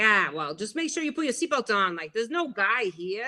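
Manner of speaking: put-on Brooklyn accent. Recalling the father answering his child at a haunted house, imitating a Brooklyn accent. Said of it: "he talked like this".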